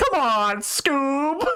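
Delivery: very high-pitched cartoon voice. Acting out a cartoon character's line: Shaggy voice. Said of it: "Shaggy's like".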